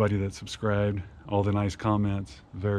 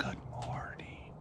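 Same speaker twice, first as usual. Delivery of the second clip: very soft, barely-there whisper; 3 semitones higher, 13 dB quieter than usual. Retelling what a crazy guy in a flashback says: imitating a soft whisper. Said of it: "really softly".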